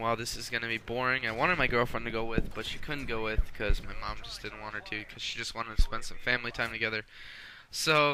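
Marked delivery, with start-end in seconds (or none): none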